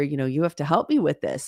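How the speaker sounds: ordinary talk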